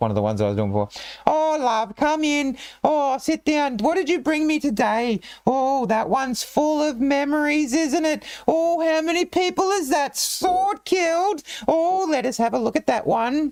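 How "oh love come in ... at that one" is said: put-on very high, slow, drawn-out comic old-lady voice. Narrating a game, the speaker voices a disguised old lady in a Monty Python old lady voice. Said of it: "she's got that old lady Monty Python voice".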